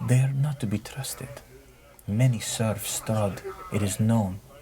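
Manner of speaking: quiet, low voice. Voicing a character warning quietly so others don't hear: lowered voice. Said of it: "he lowers his voice so the others don't hear".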